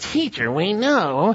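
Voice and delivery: sly, flattering little voice. Reading the passage, the speaker voices the Herodians in a put-on little sly voice. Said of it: "they would have a little sly voice".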